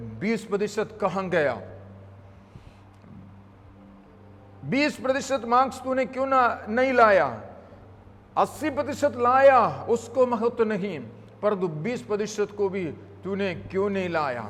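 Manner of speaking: ordinary talk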